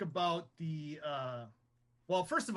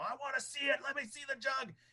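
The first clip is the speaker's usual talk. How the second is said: put-on scream, higher; 9 semitones higher than usual. Retelling taunting the opposing players from the stands: imitating someone screaming. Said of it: "I'm screaming at these Michigan players".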